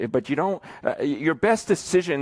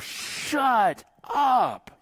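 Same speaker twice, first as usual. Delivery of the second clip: put-on very high, shrill, furious scream; 11 semitones higher than usual. Parent recalling screaming at a two-year-old daughter, retelling own scream. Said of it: "I literally screamed".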